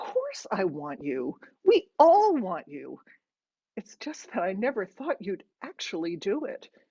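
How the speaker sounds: plain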